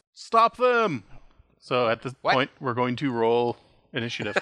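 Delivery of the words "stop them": very high, shrill, loud shouting. Narrating the game, the speaker voices Sozin after Marius jumps into the pool, yelling. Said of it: "and he yells".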